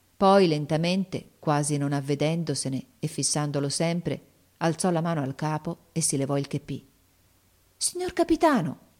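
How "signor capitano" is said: very high, astonished, amazed cry. A boy sees his captain take off his cap to him, exclaiming in amazement. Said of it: "esclamò il ragazzo meravigliato".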